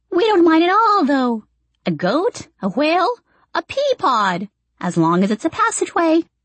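high, screechy voice of a tiny person. Reading a story aloud, voicing one of the little people in a screechy voice. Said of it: "A screechy-voiced one adds".

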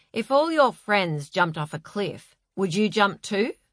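plain

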